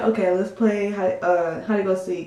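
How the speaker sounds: usual speaking voice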